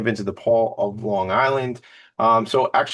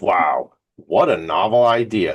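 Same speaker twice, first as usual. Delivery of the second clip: very slow, drawn-out drawl dripping with sarcasm; 3 semitones lower than usual. Commenting on a charity's founding idea of helping others: dripping with sarcasm. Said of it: "Dripping with sarcasm for you all today".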